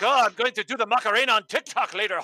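loud, high, dopey and goofy delivery. Mocking how a wrestler talks on the mic: Drew McIntyre impression. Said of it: "they have Drew doing".

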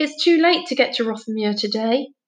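usual speaking voice

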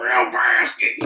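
loud, croaky, rough, animal-like deer call. Retelling how a deer said a name: deerish voice. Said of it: "in the most deerish way".

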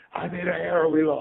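put-on very high, tearful, crying child's yell. Retelling yelling at dad in the car after an error lost a game: imitating own past yelling. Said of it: "And I'm yelling".

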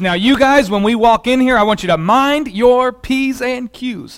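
classic, very motherly voice. Recalling arriving at a friend's house as a child, imitating mom's voice. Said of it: "in her very mom voice".

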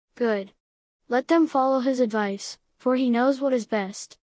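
plain reading voice

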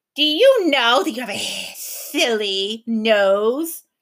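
slow, menacing hiss, "nose" drawn out. Reading a story aloud, a gaboon taunts Tom: hissing. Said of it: "it hissed".

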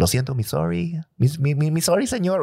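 Mexican accent, broken English. Demonstrating an accent for a friend who asked for it, mixing Spanish and English, Mexican accent. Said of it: "That accent".

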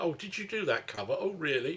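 dry, sarcastic, mock-interested tone. Imitating friends fed up with hearing the same topic, imitating friends' sarcasm.

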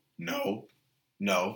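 soft voice cracking on "no". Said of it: "A little bit of a voice crack there".

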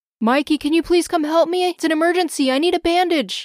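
high, alarmed, urgent, panicked voice. Dad calls out to his son Mikey, in a panicked voice. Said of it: "in a panicked voice".

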